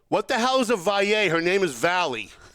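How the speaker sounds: loud, high-pitched blurted yell. Recounting yelling at a speaker who mispronounced a name: retelling own yell. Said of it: "but I yelled".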